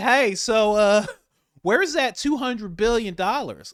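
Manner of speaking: high, loud, offhand tone. Acting out a comic scene about a missing two hundred billion: imitating Lindsey Graham. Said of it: "Lindsey Graham's like".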